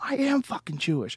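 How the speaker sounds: put-on angry, furious retort, whispered. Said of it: "And he got really angry".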